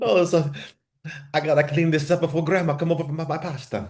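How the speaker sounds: put-on, high, comic, funny Italian accent. Joking around with another speaker, in a funny Italian accent. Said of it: "a funny Italian accent".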